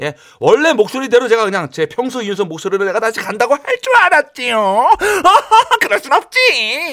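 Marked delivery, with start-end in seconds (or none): 3.5-6.9 high, nasal, cute aegyo voice. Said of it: "제 콧소리 때문에".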